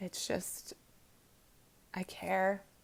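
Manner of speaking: quiet, choked-up, tearful voice. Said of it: "sorry for being emotional".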